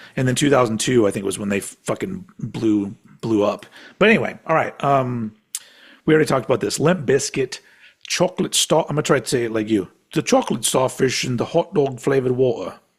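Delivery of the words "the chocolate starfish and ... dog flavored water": put-on very upper-class, posh British English accent. Trying to say a phrase like the other speaker, speaker lands on posh British. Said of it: "It sounds like a very posh British guy".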